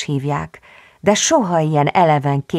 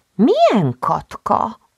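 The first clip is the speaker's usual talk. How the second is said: puzzled, surprised, high wondering tone; 7 semitones higher than usual. Answering a just-woken squirrel who asks after someone; wondering. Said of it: "Csodálkozott Vanda".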